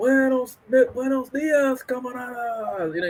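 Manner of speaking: put-on loud, high shout. Retelling a man's daily call-out to the whole tier, imitating a loud call-out. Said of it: "And he says it loud".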